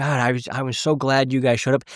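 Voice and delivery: mock crying, tearful speech. Speaker quoting a waitress who cried, imitating someone crying. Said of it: "to have her cry and be like".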